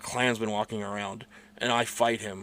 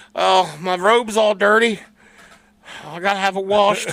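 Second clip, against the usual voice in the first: mock crying, higher pitch; 8 semitones higher, 4 dB louder than usual. Retelling a story about students beating up the Klan: imitating a crying Klansman. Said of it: "the one Klansman crying".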